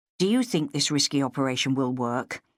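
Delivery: ordinary delivery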